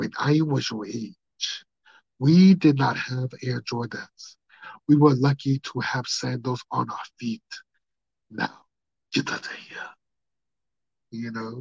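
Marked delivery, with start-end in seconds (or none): 0.0-9.8 put-on Nigerian-accented parent voice. Retelling a comedian's bit about Nigerian parents: imitating Godfrey's Nigerian parent voice. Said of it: "that comedian Godfrey, when he talks about his Nigerian parents".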